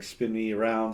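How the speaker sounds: ordinary talk, nothing marked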